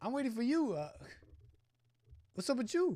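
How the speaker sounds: put-on tough New York street accent. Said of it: "That sounds like a New Yorker".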